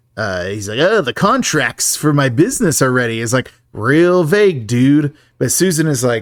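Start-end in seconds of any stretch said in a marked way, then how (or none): none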